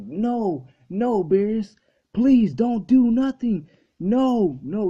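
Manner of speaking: desperate, high, loud, slow, long and stretched. Retelling an episode where Vegeta begs Beerus: imitating Vegeta pleading.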